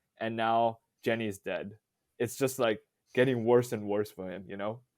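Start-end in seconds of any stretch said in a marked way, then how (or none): none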